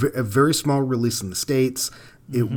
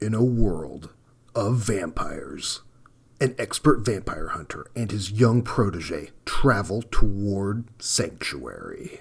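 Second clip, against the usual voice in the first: epic, dramatic movie trailer announcer voice; 3 semitones lower than usual. Podcaster reading a description aloud to the other host, in a movie trailer announcer voice. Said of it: "use the voice of the guy that does the trailers".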